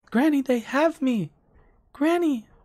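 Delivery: put-on eerie little girl voice, very high, calling out. Narrating the campaign, voicing a girl calling from inside a tent: little girl voice. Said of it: "Little girl voice".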